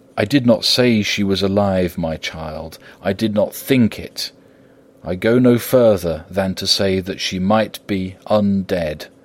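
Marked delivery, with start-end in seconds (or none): none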